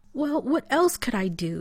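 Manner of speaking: high, exasperated, fed up, demanding tone. Rodney answers Taylor about carrying Shepard back to the Stargate: demanding. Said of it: "He demanded".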